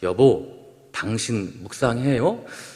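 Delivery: soft, low-voiced, hushed and quiet. A preacher retelling his wife's question in the car after a sermon, imitating a low, quiet question. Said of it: "좀 낮은 목소리로 조용히".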